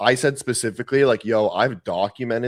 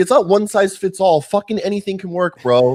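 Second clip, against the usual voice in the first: acted, worked-up, heated, high-pitched delivery; 8 semitones higher, 4 dB louder than usual. Retelling a reply to an online commenter: retelling own heated reply. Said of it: "and so I was just all heated".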